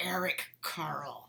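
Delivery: really furious, angry delivery. Showing a class how to say the name: really angry. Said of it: "say it like you're really angry".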